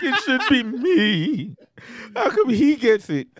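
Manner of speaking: put-on crying, voice wobbling and quivering with tears. Retelling their own past outburst, imitating crying with voice quivering. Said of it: "with tears in my eyes, voice quivering".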